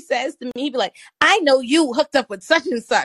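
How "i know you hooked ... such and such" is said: playfully theatrical triumphant delivery. Retelling what a drunk law-school classmate said at a party: imitating a big gotcha reveal. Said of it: "he said it like this was this big".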